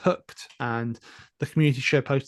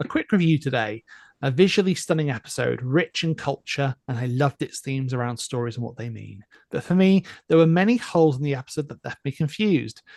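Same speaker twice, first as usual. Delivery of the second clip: ordinary delivery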